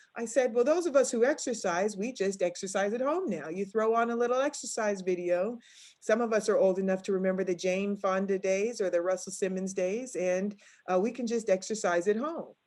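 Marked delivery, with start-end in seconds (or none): none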